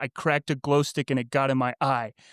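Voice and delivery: ordinary talk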